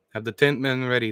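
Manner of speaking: plain reading voice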